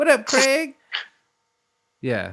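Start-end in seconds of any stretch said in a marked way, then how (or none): 0.0-0.7 put-on very high, piercing, shrill, loud old-lady voice. Recalling a neighbor character from a movie: old woman from Next Friday.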